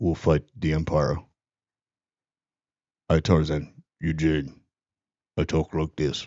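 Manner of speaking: exaggerated low mock voice. Mimicking a man who kept emphasizing a deep voice: exaggerated extra-deep voice. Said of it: "real deep".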